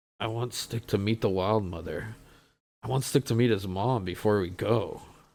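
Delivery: hushed whispered aside. A player's character whispers to Cass from behind a hand, whispering. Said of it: "I'm gonna whisper to Cass and say".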